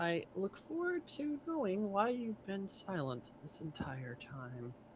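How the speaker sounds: secret, hushed half-whisper, in character voice. Speaking in character to a silent bodyguard, out of earshot: half-whispering in character. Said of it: "I'm gonna just whisper to him".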